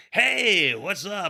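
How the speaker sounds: very high-pitched radio announcer voice. Imagining randomly greeting people while wearing matching shirts: radio announcer voice. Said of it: "radio announcer voice".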